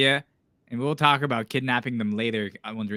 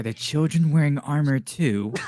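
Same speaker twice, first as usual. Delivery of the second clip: stage half-whisper; 4 semitones higher than usual. Tabletop player in character asks the guard a question, half-whispering. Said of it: "I whisper to the guard".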